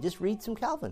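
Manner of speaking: soft gentle voice. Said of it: "very calmly and nicely say".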